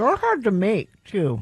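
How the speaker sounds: words spoken around a mouthful, mouth full. Speaker, eating while chatting with others, talks with mouth full. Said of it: "say it with my mouth full".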